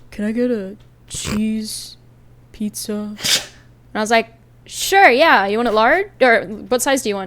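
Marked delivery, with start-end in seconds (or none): 0.1-2.9 hushed, breathy, whispered put-on voice. Retelling someone ordering a cheese pizza: imitating his voice. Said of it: "I always love doing this voice because it was exactly what he sounded like".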